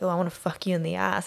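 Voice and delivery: ordinary talk, nothing marked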